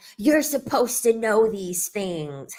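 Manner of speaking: mock mad, blaming, angry outburst. Retelling what he said about the speaker's infection; imitating a mad man. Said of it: "He was so mad".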